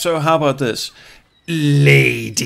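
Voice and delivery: derogatory "lady". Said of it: "lady can be derogatory if you, if you inflict it correctly".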